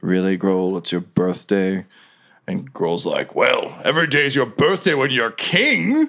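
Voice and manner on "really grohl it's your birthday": very silky, smooth-as-silk voice. Narrator voices someone inside as grohl walks in; very silky voice. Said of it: "you hear sort of a very silky voice say".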